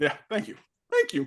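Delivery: high voice, cracking and breaking. Teased as prepubescent by another speaker, answering with thanks: voice cracking. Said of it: "my voice is cracking".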